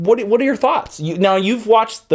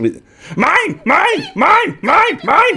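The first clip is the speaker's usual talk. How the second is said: put-on old alien creature voice, higher. Acting out a scene on request, hitting with a stick: Yoda voice. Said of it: "impression of Yoda hitting R two with stick".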